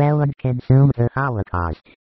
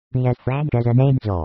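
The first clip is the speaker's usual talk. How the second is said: plain reading voice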